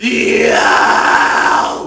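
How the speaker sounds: very loud, rough, heavily distorted grunge growl on yo. Explaining guitar distortion, going from clean to more grunge: gritty distorted voice. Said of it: "Add more".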